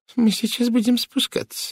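quavering, shaky, trembling, very high voice. A woman walking unsteadily toward the doctor speaks to him in a trembling voice. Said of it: "дрожащим голосом сообщила она".

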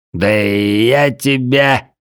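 put-on very drunk-sounding cry, я drawn out. Narrator, slipping away from a guard near the stables, shouting in a drunken voice. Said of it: "как можно более пьяным голосом крикнул".

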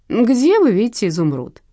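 scornful, mocking, sneering, needling tone. The director questions the narrator, mockingly. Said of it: "насмешливо поинтересовался директор".

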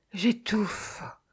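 whispered stifled groan. Half-carried through the metro's underground corridors, she moans. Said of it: "gémit Maya".

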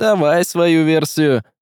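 suspicious tone. Narrating a story, Vasily agrees to hear out the wizard; distrustful. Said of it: "все еще глядя на колдуна с недоверием".

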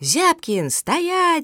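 very high-pitched, shrill, sudden shout. Lena calls after Zyabkin as he turns off the road to avoid her, shouting. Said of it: "закричала она".

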